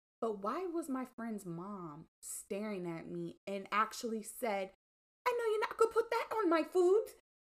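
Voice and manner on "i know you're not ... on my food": poor fake English accent, very high and fast. Quoting a friend's mom who was staring at her, in a bad English accent. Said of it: "That wasn't a really good English accent".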